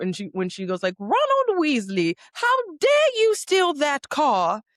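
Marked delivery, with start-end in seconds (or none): 1.0-4.6 very high, sing-song, swooping scolding tone. Imitating a Harry Potter character scolding Ronald Weasley: Harry Potter character voice. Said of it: "it comes from Harry Potter".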